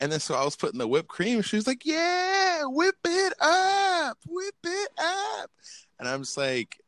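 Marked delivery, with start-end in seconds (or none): 1.8-5.5 put-on very slow, very high hyped cheer, up stretched. Retelling how a woman reacted to the whipped cream, imitating hyped excitement. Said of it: "she got so hype".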